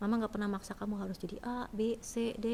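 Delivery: plain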